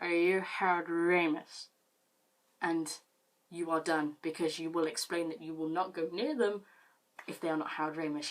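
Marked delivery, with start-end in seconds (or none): 0.0-1.7 put-on drunk voice, louder and slower. Advising listeners how to deflect someone at a party, in a drunk voice. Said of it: "in your best drunk voice you go".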